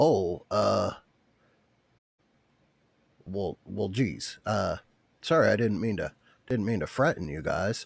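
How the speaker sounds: talking raccoon character voice. Voicing a raccoon that the players find in a bush: raccoon character voice. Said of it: "raccoon, uh, standing up on two feet".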